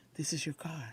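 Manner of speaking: very soft, quiet, hushed voice. Retelling hearing God speak while sitting in a new car: retelling a half-whisper. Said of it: "God whispers".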